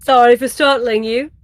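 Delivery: loud put-on British accent. Role-playing a character in a game, british accent. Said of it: "I put on the British accent".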